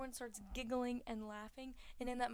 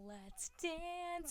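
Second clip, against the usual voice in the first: high-pitched cartoon voice; 7 semitones higher than usual. Recapping a movie scene, voicing a male character's line in a SpongeBob voice. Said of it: "in a SpongeBob voice".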